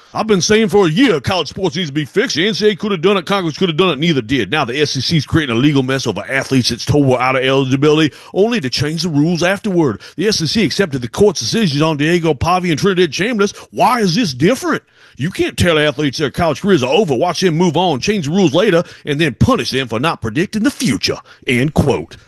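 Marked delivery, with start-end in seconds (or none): 0.2-21.2 high, goofy, stupid-sounding mock voice. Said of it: "I did my goofy, stupid voice".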